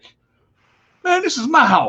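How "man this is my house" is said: much higher-pitched, proud boasting voice. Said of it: "you're like".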